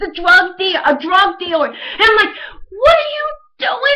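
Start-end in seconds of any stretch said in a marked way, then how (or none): 2.7-4.0 mock very high, shrill, rushed, rattled-off screaming. Retelling the night he discovered what she had done, re-enacting screaming at her. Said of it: "I'm screaming at her".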